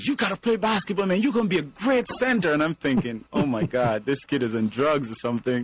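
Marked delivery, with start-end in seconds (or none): 0.0-2.5 high-pitched screaming with insistence. Retelling how a kid at school screamed at him; imitating a kid screaming. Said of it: "he starts screaming at me".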